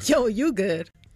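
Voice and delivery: sarcastic tone. Asked what sarcastic sounds like, the speaker demonstrates: sarcastic. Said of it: "What does sarcastic sound like?".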